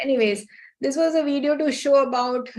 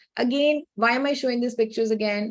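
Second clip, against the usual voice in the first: ordinary talk, nothing marked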